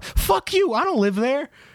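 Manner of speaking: very high, mock outraged tone.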